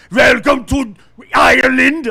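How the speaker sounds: put-on very loud, heavy German accent. Quoting a German guy saying welcome to Ireland: Schwarzenegger-style German accent. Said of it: "in that Schwarzenegger voice".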